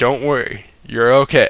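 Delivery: low whisper. Retelling what an uncle said at the bedside: imitating someone whispering. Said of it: "whispering in my ear".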